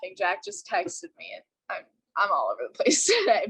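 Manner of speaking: giggly, swooping laugh-talk throughout the words. Apologizing to the group mid-meeting after a text, laughing while talking. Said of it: "I'm sorry if I'm laughing".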